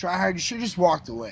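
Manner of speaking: normal talking voice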